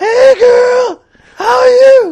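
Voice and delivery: put-on very high, loud woman voice. Podcast co-hosts improvise a skit, one doing a woman voice. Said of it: "woman voice".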